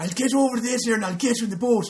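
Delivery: high, loud, bright mock film-style Irish accent. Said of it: "that was actually better than he did".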